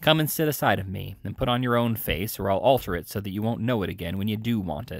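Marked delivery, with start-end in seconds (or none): none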